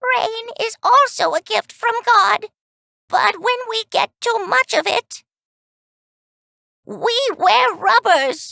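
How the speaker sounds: put-on weak, frail, very high little old lady voice. Reading a joke aloud, voicing a little old lady: frail old lady voice. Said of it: "with her frail voice says".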